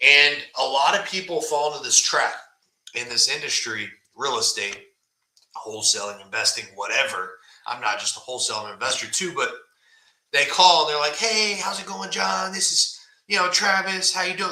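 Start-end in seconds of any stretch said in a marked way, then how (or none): 11.2-14.5 chirpy, lovey-dovey, upbeat salesman voice, pitched up. Mimicking callers in the wholesaling industry: mock-upbeat salesman voice. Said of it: "This upbeat all the time, like salesman".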